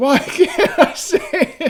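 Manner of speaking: desperate crying out. Retelling how he fell down onto all fours, imitating someone crying out. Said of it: "he's like crying out".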